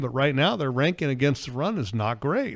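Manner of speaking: plain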